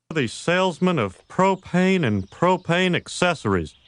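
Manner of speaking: cartoonish Texan drawl, put-on. Joining in a King of the Hill bit, doing a Hank Hill impression. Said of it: "I'm going to make sure I do my impersonation of Hank Hill".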